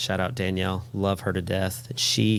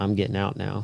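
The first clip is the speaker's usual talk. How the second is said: imitated calm, very quiet voice. Retelling what a big man in the ambulance said to you, imitating a calm, quiet voice. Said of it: "very calmly, very quietly says".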